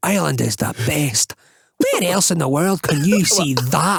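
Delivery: put-on Scottish accent in tourism-advert style. Acting a bloke on a hill in a tourism advert: put-on Scottish accent. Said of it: "I was even doing a Scottish accent".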